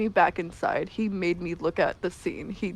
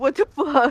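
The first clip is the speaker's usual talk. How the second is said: mock raw, distraught, high, panicked outburst; 7 semitones higher, 4 dB louder than usual. Retelling own reaction in a raw emotional moment: imitating own distraught panic. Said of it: "raw emotional moment while I'm still sitting there going".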